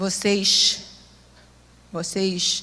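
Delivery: Rio de Janeiro Portuguese accent. Showing how a carioca would say the word: carioca accent. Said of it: "Como é que o carioca vai falar?".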